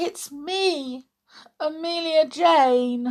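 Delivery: very small, high, slow voice, "me" drawn out. Scratched and back again, she answers the toys who rushed to hide, very small voice. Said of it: "said Amelia in a very small voice".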